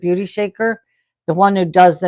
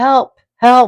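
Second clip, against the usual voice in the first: mock yelling in a higher pitch; 5 semitones higher, 6 dB louder than usual. Describing being woken while sleeping, retelling a guy's shout, retelling a yell for help. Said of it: "yelling, help".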